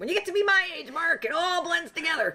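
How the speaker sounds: put-on very high old lady voice. Portraying one of the characters in a taped reading, in an old lady voice. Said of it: "your old lady voice".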